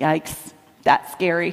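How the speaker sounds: very calm, low, flat deadpan. Speaker quotes a young niece who said this whenever something was scary, imitating her deadpan. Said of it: "would say in a deadpan voice".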